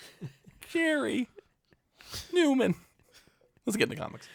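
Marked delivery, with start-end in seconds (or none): 0.7-2.7 bad, high-pitched, hushed impression, hissed. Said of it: "like a bad Jerry Seinfeld impression".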